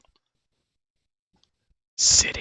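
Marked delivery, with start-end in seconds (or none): 2.0-2.4 low, rasping, breathless voice. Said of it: "it'll rasp out".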